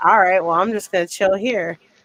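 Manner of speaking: plain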